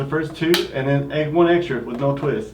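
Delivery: normal talking voice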